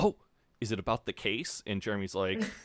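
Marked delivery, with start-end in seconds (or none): none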